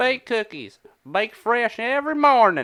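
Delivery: very high Southern twang, Kentucky. Retelling how a man kept saying it the entire time, in a Kentucky Southern twang. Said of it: "had like a Kentucky Southern twang".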